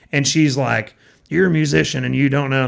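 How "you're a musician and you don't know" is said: imitated drunk woman, raspy smoker voice. Retelling a complaint from an audience member at a show: imitating a drunk audience member. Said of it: "That's my impression of her".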